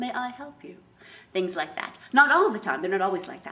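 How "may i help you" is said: high-pitched, robotic, machine-like computer voice. Describing characters being taken over by a computer, demonstrating their computer voice. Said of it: "their voice sometimes goes into computer voice".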